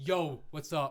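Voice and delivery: mock macho, tough-guy voice. Imitating men acting tougher in front of other men: imitating a tough-guy greeting. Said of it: "the thing men do in front of other men to seem tougher".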